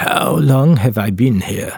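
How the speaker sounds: rough, raspy, rasping voice. A narrator voices a trapped man who has just switched to english: raspy voice. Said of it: "he asks in a raspy voice".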